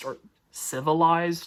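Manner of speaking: "civilized" said mockingly.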